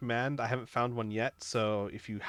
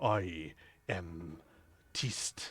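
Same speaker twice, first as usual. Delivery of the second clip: slightly deeper, soft, quiet goblin voice; 6 semitones lower, 6 dB quieter than usual. A goblin stands on tiptoes to introduce itself, in Pibble's slightly deeper voice. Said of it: "says in a slightly uh, deeper voice".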